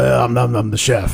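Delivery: put-on smoker's voice. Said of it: "That's why he sounds the way he sounds".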